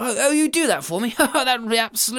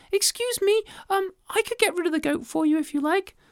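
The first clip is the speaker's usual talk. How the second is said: tiny, small, high little creature voice; 8 semitones higher than usual. Reading a story aloud, the narrator voices the tiny ant: tiny little voice. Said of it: "said the tiny little voice".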